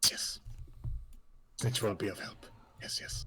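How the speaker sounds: twitchy, skittering rat creature voice. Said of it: "sort of leans in and goes".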